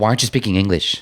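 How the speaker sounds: mock confrontational, aggressive, accusing, demanding tone. Retelling what a random lady asked at the table: imitating an aggressive tone. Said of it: "I just distinctly remember her tone being like".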